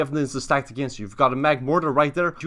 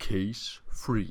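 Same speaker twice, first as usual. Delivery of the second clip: grand, epic-sounding tone; 5 semitones lower, 9 dB quieter than usual. Running a mock courtroom and calling the next case, in an epic voice. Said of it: "Said with my epic voice".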